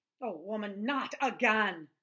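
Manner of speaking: growling. A man answers a woman urging him to get up, growled. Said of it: "Ben growled".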